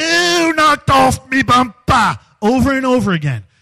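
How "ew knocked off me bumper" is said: slow, high, drawn-out, repeated hollering. Recounting a man shouting the same words over and over, imitating a man yelling. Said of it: "And he's just yelling it".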